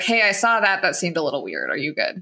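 ordinary delivery

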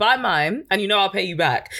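ordinary delivery

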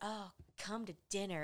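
very sultry, come-hither, inviting tone. Retelling how a character invites a guest to dinner: imitating a sultry voice. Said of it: "this real sultry voice".

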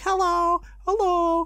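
put-on high childlike voices. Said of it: "all the other people were like".

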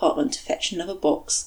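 plain reading voice

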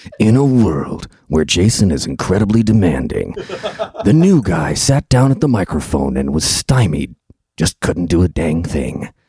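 loud, epic movie-trailer narrator voice. Asked on the spot to do impersonations, the new guy does a movie trailer voice. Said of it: "you do a good trailer of voice guy".

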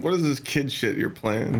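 ordinary talk

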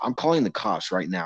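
ordinary talk

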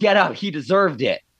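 ordinary delivery

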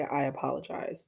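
ordinary delivery

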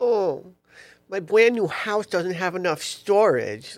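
childish, mocking, taunting voice. Imitating another speaker to tease them: mocking childish imitation. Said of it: "mockingly childish".

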